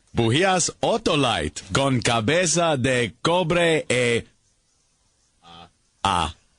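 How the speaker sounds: halting, stumbling reading of Spanish words. Reading a spanish ad line aloud from paper: halting spanish reading. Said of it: "doing your voice in Spanish".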